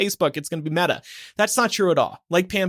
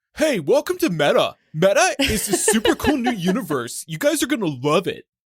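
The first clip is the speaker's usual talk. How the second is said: annoying, clunky college frat bro voice; 3 semitones higher than usual. Mocking a tech announcement, imitating Mark Zuckerberg as an annoying college bro. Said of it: "he just sounds like an annoying college bro".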